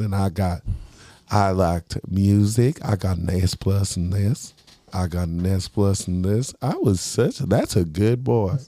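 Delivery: sweet voice with pitch swooping all over. Imitating Leslie Jordan reading his old report card: Leslie Jordan impression. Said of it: "he goes".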